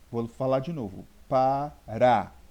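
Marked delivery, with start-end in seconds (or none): 1.2-2.2 syllable rá stressed, hit hard and loud. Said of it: "É a segunda sílaba".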